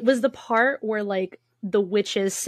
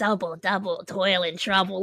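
put-on gremlin-like witch voice, quieter; 4 dB quieter than usual. Recalling being told in class to say a line like a witch, gremlin-like witch voice. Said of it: "I just started sounding like a gremlin".

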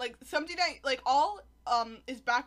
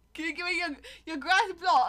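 put-on British accent, higher and louder; 6 semitones higher, 4 dB louder than usual. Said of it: "Endermen have British accents".

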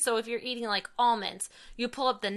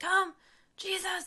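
put-on growly yell, much higher pitch; 10 semitones higher than usual. Retelling how he says Jesus during the family prayer at lunch, imitating a growly yell. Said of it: "this really like growly way he says Jesus".

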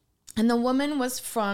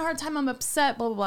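ordinary delivery

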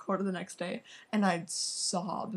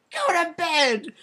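frantic shriek, very high and very loud; 10 semitones higher, 12 dB louder than usual. Speaker retelling their mom sending the kids to bed, imitating her frantic shout. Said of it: "she's like frantic".

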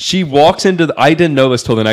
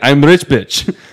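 put-on heavy, very strong Russian accent, laid on strong. Retelling a woman's reply about what she does, in a strong Russian accent. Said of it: "In like a Russian accent and very strong Russian accent".

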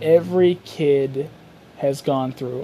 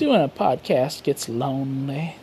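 sad-meant delivery that comes out creepy; 2 semitones lower, 3 dB quieter than usual. Podcast host being real with listeners, unintentionally creepy-sounding. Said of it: "that sounded creepier than I meant it to".

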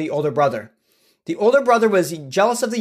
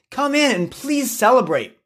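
high, earnest, pleading and begging; 7 semitones higher than usual. The father urges his older son to come in and celebrate; begging. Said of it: "he begged".

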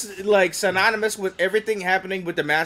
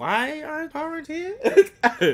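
high, far-off, confused mock whine, squeaked out. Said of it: "I was like".

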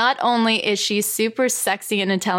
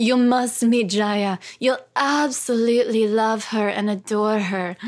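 put-on refined Hungarian accent. Retell what a mutual friend and colleague told you years ago, in Ava Cadell's elegant Hungarian voice. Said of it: "in her elegant Hungarian voice".

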